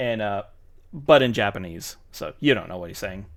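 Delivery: plain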